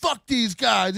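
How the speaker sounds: swaggering, defiant, chest-pounding tough-guy bravado. Imitating someone going live and pounding his chest: imitating chest-pounding bravado. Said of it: "pound your chest and go like".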